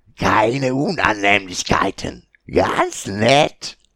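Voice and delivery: sly, mock-friendly, loud, slow goblin voice, broken speech. A goblin leader addresses the travellers while holding their bound scout: goblin chieftain voice.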